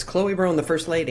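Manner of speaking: plain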